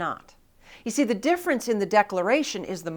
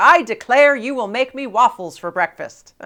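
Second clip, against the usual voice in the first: loud, commanding, thundering, booming voice; 4 dB louder than usual. Speaker to parents, acting out a child barreling down the stairs, loud booming voice. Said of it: "in a loud booming voice saying".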